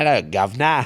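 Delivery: bad put-on English accent. Admitting they can't hold an accent for long, then trying one, bad English accent. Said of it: "if if I sound try to do English".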